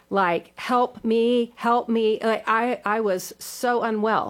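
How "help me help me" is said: put-on screaming, higher. Retelling screaming on a fast ride: imitating own screaming for help. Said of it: "I was screaming, like, for my life".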